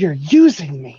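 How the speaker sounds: gasped, gasping speech. Voicing a character reacting to another character: gasping.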